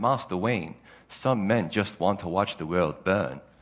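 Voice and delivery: put-on English accent, dropped to a low pitch. Retelling Alfred's words to Bruce Wayne, Alfred's English accent. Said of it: "in his English accent".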